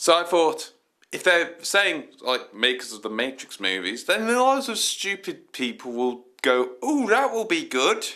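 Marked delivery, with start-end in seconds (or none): 6.8-8.1 very high, dim-sounding, put-on West Country accent. Voicing how stupid people would react, in a put-on West Country accent. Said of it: "I went for a West Country accent".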